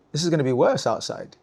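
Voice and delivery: ordinary talk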